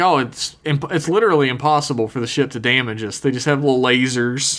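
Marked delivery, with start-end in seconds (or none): none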